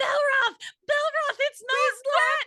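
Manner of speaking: emphatic yelling, very high, shrill and loud. Retelling how the two of them yelled at Rob: imitating yelling at someone. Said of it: "just yelling at Rob".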